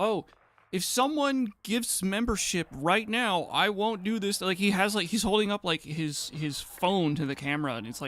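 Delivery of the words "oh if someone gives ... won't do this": play-acted pleading, begging tone. Retelling a streamer begging chat for memberships: imitating a streamer begging. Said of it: "they beg their chat".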